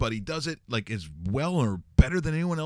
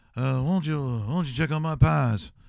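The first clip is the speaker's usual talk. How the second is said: thick, put-on Louisiana-style Southern accent. Imitating how an actor talked after moving to Louisiana: Steven Seagal, Southern voice. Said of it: "moves to Louisiana".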